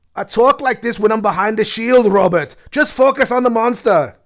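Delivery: put-on Scottish accent. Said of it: "Why is that accent coming in and out?".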